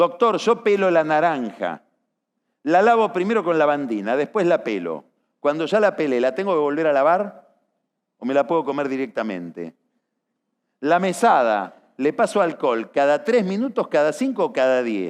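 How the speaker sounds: ordinary talk, nothing marked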